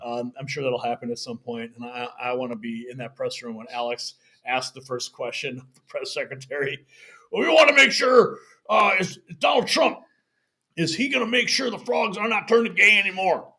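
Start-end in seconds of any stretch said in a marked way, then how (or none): 7.3-13.4 loud, high-pitched, forceful voice. Imagining a question asked in the press room: Alex Jones impression. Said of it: "that's a great impression".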